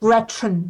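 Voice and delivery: 'gretchen' pronounced with an American accent. Showing how an American pronounces the German name Gretchen. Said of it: "wie ein Amerikaner Gretchen ausspricht".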